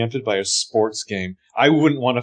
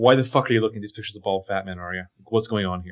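mock guileless, innocently blunt, straight-up tone; 3 semitones lower, 4 dB quieter than usual. Retelling a character reacting to a friend: imitating an innocently blunt reaction. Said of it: "very innocently blunt".

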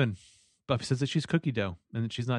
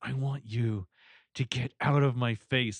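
slow, ground out through gritted teeth. Retelling a battle scene, quoting Buffy: through gritted teeth, imitating Buffy. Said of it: "Buffy through gritted teeth says".

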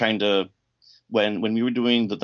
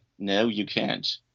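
mock pompous, pretentious British tone; 3 dB quieter than usual. Retelling an actor refusing a photo request, mock-pompous British tone. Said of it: "In that very pretentious, pompous British tone".

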